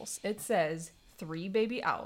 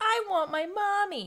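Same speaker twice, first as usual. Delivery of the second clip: very high, grating, annoying put-on voice, cranked up; 10 semitones higher, 4 dB louder than usual. Telling a story where three wake up and can't find their mom, annoying Bill voice. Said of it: "you're saying that in an annoying voice".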